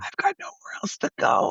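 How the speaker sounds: soft, breathy, sad and earnest near-whisper. Retelling a movie scene, acting out the woman's line, imitating her soft voice. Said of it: "her voice is so soft".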